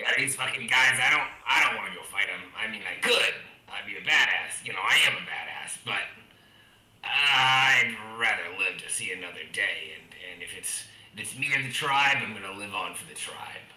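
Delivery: put-on hobgoblin creature voice, drawn-out "I'd". Speaking in character for a while, hobgoblin voice. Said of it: "did that the hobgoblin, hobgoblin just said that to me".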